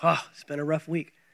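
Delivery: put-on tired voice. Mimicking how people answer when asked how they're doing: imitating a tired voice. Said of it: "But they say it with a tired voice".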